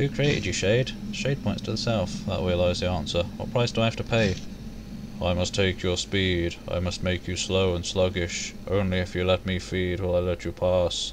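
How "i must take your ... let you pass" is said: low drone, level and monotone throughout. The guardian Shade answers a traveler's question: Shade's low droning voice. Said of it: "It starts to speak in a low, droning voice".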